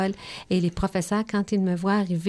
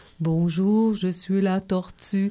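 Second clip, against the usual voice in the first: slow, plodding, drawn-out tortoise character voice. Showing listeners how to give the slow tortoise its voice: slow tortoise voice. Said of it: "on peut prendre une voix plus lentement".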